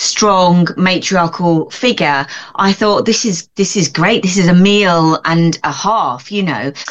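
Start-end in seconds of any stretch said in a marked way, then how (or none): none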